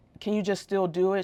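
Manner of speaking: ordinary delivery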